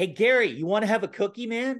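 put-on laid-on Canadian accent. Retelling his ten-year-old self coming home with a friend, put-on Canadian accent. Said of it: "going to Canada when everyone's speaking like that".

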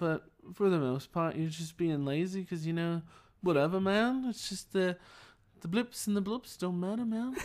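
lazy, relaxed put-on British accent. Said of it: "You kinda do a British accent".

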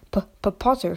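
stammered, stuttering delivery. A professor meeting the boy for the first time grasps his hand, stammering. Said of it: "stammered Professor Quirrell".

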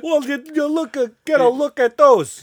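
sudden fake Boston accent. Retelling a guy at a bar showing off to a girl, sudden Boston accent. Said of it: "He just develops an accent".

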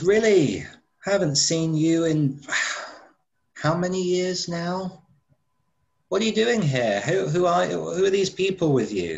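high-pitched angelic voice. Narrating a scene, the queen on her throne greets the visitors: very high-pitched angelic voice. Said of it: "in a very high-pitched, almost like angelic voice".

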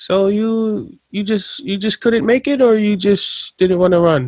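put-on sarcastic old-lady voice. Retelling an old lady teammate's dig: imitating a sarcastic old lady. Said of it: "she was so sarcastic with her disses to me".

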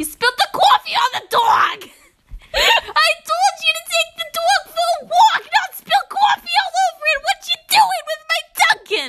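very high-pitched, put-on New Jersey accent. Trying out different accents, now doing a New Jersey accent. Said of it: "let's do a New Jersey accent".

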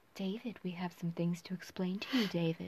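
low, soothing ASMR-style voice. Retelling a film line to another speaker: imitating Meryl Streep's soothing voice. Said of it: "vocalizing her very soothing voice".

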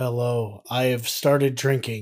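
put-on depressed duck voice. Riffing a fake Disney Plus ad as Donald Duck, depressed Donald Duck voice. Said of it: "Donald's real depressed".

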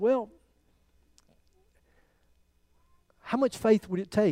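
mild, careful, soft and gentle, no sarcasm. Retelling what the speaker said to a woman one day, retelling speaking gently. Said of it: "I said very gently".

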